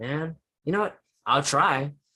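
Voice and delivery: snide, grudging sarcasm with attitude. Acting out someone with an attitude told to clean the room: sarcastic attitude. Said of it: "with a sarcastic voice".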